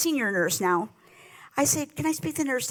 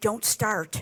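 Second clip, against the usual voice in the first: put-on whisper, lower pitch; 4 semitones lower than usual. Retelling a brother's warning at a hospital: imitating a whisper. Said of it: "my brother whispers to me".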